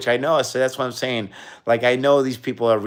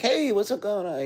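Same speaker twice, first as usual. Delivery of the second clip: very high-pitched, soft, friendly tone; 10 semitones higher, 5 dB quieter than usual. Showing how they talk to children, raised friendly voice. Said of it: "I make it sound friendly".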